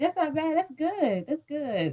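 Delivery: put-on casual, quiet, offhand, nonchalant tone. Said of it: "I should be like".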